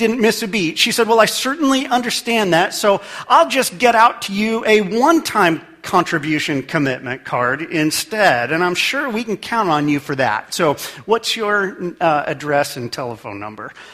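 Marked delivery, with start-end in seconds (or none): none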